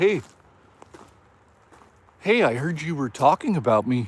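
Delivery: creepy, eerie voice. Imagining a creepy guy showing up unannounced: imitating Wallet Guy. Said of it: "And he was like".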